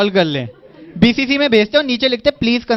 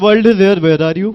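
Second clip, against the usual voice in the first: put-on thick Indian accent, lower pitch; 3 semitones lower than usual. Quoting how certain people talk, in a thick indian accent. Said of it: "ठेठ इंडियन एक्सेंट में बोलते हैं".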